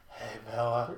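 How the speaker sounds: panting, breathing heavily, breathy voice. Imitating a husky dog greeting Bella, heavy breathy voice. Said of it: "He's just breathing real heavy, like".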